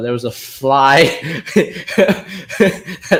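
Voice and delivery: slow delivery, laughing throughout.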